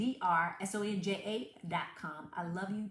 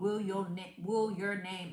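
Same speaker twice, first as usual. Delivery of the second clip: put-on Southern US accent slipping out. Calling out a roll call on wealth builders: southern accent slipping out. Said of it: "that Southern accent came out".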